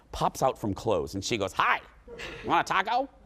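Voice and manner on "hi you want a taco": put-on high, little bitty old woman's voice. Retelling a little old woman offering a taco: imitating a little old woman. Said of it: "little bitty little old woman".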